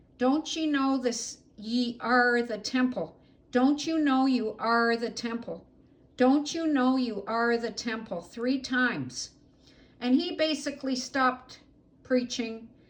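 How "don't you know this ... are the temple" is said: mock half-strength yelling, insistent and pressing. A woman recounts a dream where she yelled at a preacher mid-sermon: retelling her own yelling. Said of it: "I kept yelling".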